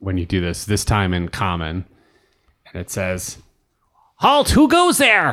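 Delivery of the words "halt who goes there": very high, defiant crying out. Narrating a scene, the speaker voices an unseen figure, crying out a challenge. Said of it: "you hear a voice uh, cry out".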